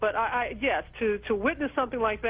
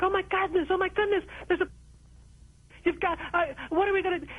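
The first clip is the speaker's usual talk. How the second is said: high, frantic, panicked put-on screaming; 9 semitones higher than usual. Recounting a phone call with her producer, the speaker re-enacts it: retelling screaming into a phone. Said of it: "I'm screaming in the phone like".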